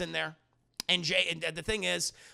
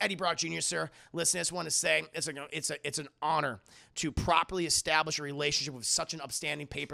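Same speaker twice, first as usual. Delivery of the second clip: plain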